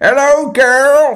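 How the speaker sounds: put-on very high girl voice, Cornish accent, words stretched. Asking how to do a Cornish accent, then trying it in a Cornish accent. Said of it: "How do you do Cornish accent?".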